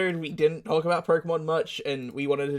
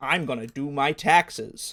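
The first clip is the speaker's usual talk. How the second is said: best-effort put-on American accent. Put on the spot and asked to say a set line, in best american accent. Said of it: "with your best American accent".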